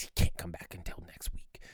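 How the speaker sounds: furious, angry, breathy, hushed whisper. Recalling a woman in church whispering to the speaker's mom, retelling an angry whisper. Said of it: "whispering to my mom in a very angry voice".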